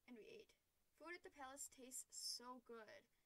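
plain

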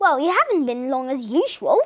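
plain reading voice

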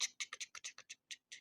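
tense, urgent, unvoiced whisper.

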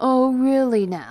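loud, high, mocking, teasing taunt. An opponent the narrator is about to fight answers their greeting, taunting. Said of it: "he taunted".

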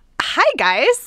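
very high, put-on valley girl voice.

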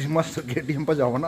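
plain

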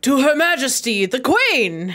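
big, boisterous, loud voice. Voicing Otto as the others hear him call out, boisterous Otto voice. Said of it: "you'll hear like this boisterous voice".

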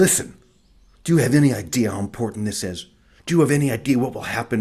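put-on scolding tone. Speaker recounts a woman grabbing their shoulder, retelling her scolding. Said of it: "she just starts reaming me".

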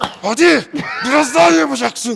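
loud, high-pitched cheering shout.

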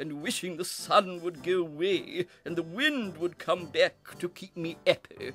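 ordinary delivery, nothing marked

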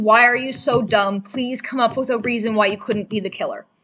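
put-on tearful, pleading voice. Recounting a trial scene, acting out a character begging another, imitating tearful begging. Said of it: "tears in his eyes, saying".

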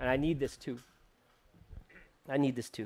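overcome with feeling, low and soft. A preacher, preaching to himself as much as to his listeners, getting emotional. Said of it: "I'm getting emotional".

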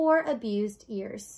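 ordinary delivery

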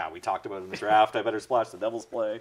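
ordinary delivery

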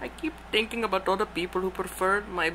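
put-on speaking with Indian accent. Answering someone who asks what's wrong, in an Indian accent. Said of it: "You sound Indian".

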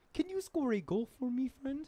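high-pitched cartoon frog puppet voice. Two speakers trade character voices: Kermit the Frog voice. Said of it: "That was Kermit the Frog".

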